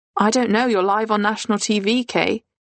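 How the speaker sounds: ordinary talk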